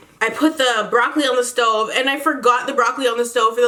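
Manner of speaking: ordinary talk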